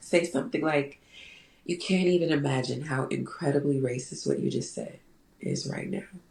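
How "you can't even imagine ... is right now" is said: gentle, soft, hushed, unraised voice. Retelling how Toni Morrison answers racism in an interview: soft Toni Morrison voice. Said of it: "with this soft voice".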